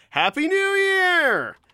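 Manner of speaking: very high, loud yell, "year" stretched long. Greeting listeners at the start of the show: yelling. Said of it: "Sorry for all the yelling".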